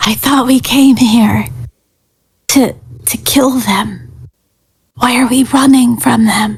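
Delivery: whispering. Whispering in character to a companion during an escape: whispering to a companion. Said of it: "I'm gonna whisper to Night Fang".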